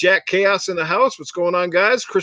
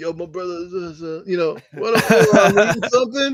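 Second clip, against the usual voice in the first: slick, easy, smooth-talking voice. Retelling how a friend answered when asked if he was eating: imitating Yowie's slick voice. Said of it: "Yowie with that slick voice of his".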